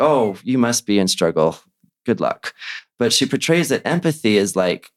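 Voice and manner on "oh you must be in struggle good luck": ordinary talk, nothing marked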